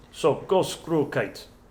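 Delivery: slow put-on Russian accent, male voice. Trying out accents while flying a kite: Russian accent, male voice. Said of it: "I can do a Russian accent, but only in male voice".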